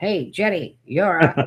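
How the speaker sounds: vintage broadcast American man. Retelling a voice that came through two devices: imitating an American man on old TV.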